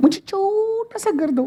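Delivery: high, fast mock meek voice.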